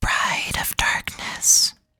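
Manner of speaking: whispering voice. Voicing a mysterious whisper heard in the room: whisper. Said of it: "you hear the whisper".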